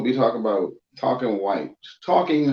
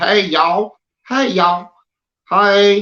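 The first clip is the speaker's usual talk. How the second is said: put-on exaggerated Southern drawl, very high, very slow; 9 semitones higher, 7 dB louder than usual. Imitating how outsiders think Southerners talk: mock stereotyped Southern accent. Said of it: "I'ma say it like how I feel like they saying it".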